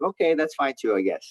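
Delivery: normal talking voice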